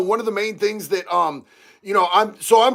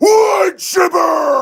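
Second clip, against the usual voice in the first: full-on, loud, high-pitched yelling; 8 semitones higher, 5 dB louder than usual. Answering a comment asking why you're always yelling: yelling. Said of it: "Now I'm yelling, dog".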